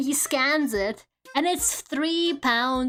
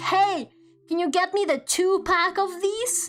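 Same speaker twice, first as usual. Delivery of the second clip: put-on high call carried across a room; 6 semitones higher than usual. Retelling how a cashier called to another employee: imitating someone shouting across a room. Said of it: "he shouts across the room".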